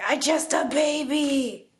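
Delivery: loud, angry, dragged out very slowly. Imitating a well-known audio clip: imitating an angry voice. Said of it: "And it goes all angry".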